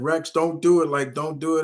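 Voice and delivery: high, earnest, pleading voice. Retelling a story where he pleads with Rex, imitating someone pleading. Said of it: "And he's just pleading with him".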